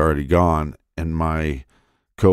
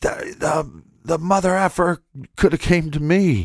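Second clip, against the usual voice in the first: put-on shrieking rant, very high-pitched screaming outburst; 12 semitones higher than usual. Retelling reacting to a coworker being robbed: imitating own screaming. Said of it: "and I'm screaming".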